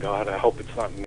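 put-on mutter under breath. Retelling a private reaction during a teaching session: retelling muttering under breath. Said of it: "I'm sitting there under my breath saying".

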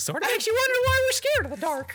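very high-pitched, cartoonish mouse voice. Quoting Kingdom Hearts dialogue to the group, in King Mickey voice. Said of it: "do it in the character's voice".

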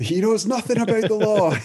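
very high-pitched shouting. Retelling shouting lines at someone across the room, re-enacting the shout. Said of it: "I'm just shouting at Ramesh Ranganathan from across the room".

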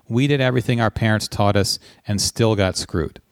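plain

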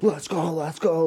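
mock psyched-up, drawn-out hyped cheer. Retelling own turn in a dance contest: imitating own excited hype-up. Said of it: "these dance numbers and going crazy".

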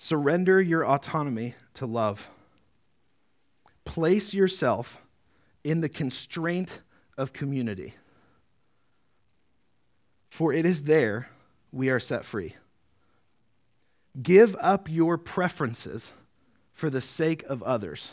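slow, unhurried reading.

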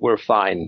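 flat, low, deadpan, level monotone. Retelling a scene where Phoebe answers a question: Phoebe's flat monotone. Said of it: "answers in a monotone".

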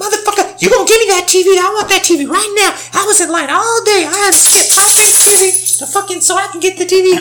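mock very high, furious, angry cursing yell. Retelling a customer yelling at a coworker over a TV: imitating a woman cussing someone out. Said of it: "she would start cussing him out".

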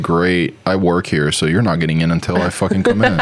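ordinary talk

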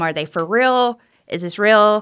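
ordinary talk

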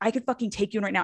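acted-out screaming. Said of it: "starts screaming at the guy".

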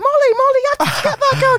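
shrill, high-pitched yelling.

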